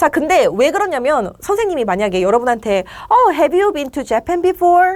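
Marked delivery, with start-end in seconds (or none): 3.1-5.0 friendly, welcoming, pitched-up tone. A teacher asks students about visiting japan, in a friendly tone. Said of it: "이런 말투로 물어보면 당연히 프렌들리한 느낌을 주겠죠".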